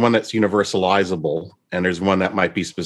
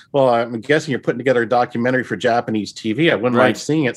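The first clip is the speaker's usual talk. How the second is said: ordinary talk, nothing marked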